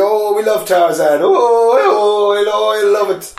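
acted, high, slow, very drawn-out rowdy cheering. Imitating how chart listeners in Ireland reacted: imitating Irish people shouting. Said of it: "we're always shouting like that when we've been down the pub".

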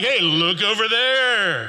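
play-acted slow, mocking, jeering call-out. Retelling how a slave girl followed the missionaries around: imitating a mocking tone. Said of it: "In a mocking way, she's like".

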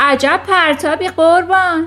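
loud yell. Reading a story aloud, voicing someone across the yard shouting after the throw: shouted. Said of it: "فریاد زد".

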